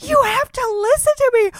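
very high, tearful, slow, drawn-out crying scream. Recalling screaming at everyone who wasn't listening, retelling a crying scream. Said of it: "crying and like screaming like".

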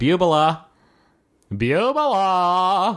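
high, stretched-out, drawn-out calling yell. Showing how a name would be yelled for a daughter: yelling a name. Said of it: "That would be me yelling for her".

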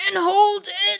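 very high, strained voice full of pain. Recounting how he gave an instruction, imitating a very pained voice. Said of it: "in a very pained voice".

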